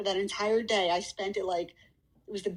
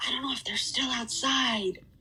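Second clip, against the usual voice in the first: secretive stage half-whisper, kept hushed; 4 semitones higher than usual. Retelling calling the cops after hearing a gun outside, half-whispering into the phone. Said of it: "I'm like whispering in the phone".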